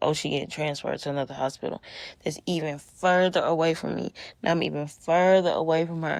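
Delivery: normal talking voice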